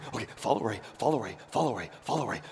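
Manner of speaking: put-on talking dog voice. Retelling a radio bit where the dog answers his master, in a dog voice. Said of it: "the voice of the dog and he's like".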